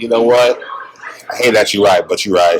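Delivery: ordinary delivery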